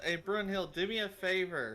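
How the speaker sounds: yelling in character. Voicing a character calling to an ally in a fight: yelling in character. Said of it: "and she yells".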